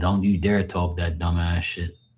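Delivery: plain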